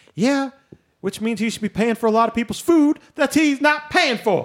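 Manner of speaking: loud yelling. Complaining about a billionaire to another speaker: yelling. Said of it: "You're yelling about it".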